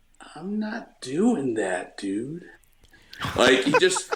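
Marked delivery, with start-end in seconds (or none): 0.4-2.5 very slow, drawn-out, swooping voice. Doing an impression of a coworker refusing a task: imitating a coworker named Dallas. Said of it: "one impression that I would do".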